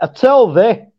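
put-on broad, old-time Yorkshire dialect, laid on thick. Teaching Yorkshire slang to a friend: broad Yorkshire accent. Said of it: "That's a really old Yorkshire accent".

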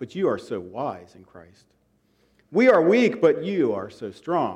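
mildly sarcastic, slow, swooping, goading tone. Quoting a letter writer mocking the readers: imitating sarcastic tone. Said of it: "he gets a little sarcastic".

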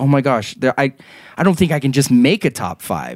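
normal talking voice

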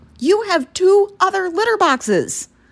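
put-on high scolding shout. Retelling how the cat kept coming in, imitating yelling at the cat. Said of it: "yelling at her".

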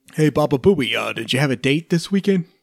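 loud, booming radio DJ voice. Talking about a radio DJ, the speaker breaks into a Howard Stern impression. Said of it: "That was my Howard Stern impression".

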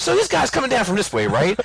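very high, lively, swooping sing-song delivery. Doing an impression of an acquaintance who talked animatedly with hands. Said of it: "whenever I would do an impersonation of him".

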